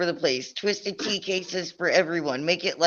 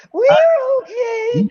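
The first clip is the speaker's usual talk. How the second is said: very high, shrill voice; 8 dB louder than usual. Retelling a man on the ground with hands up, imitating a voice jumping high. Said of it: "His voice goes up like six octaves".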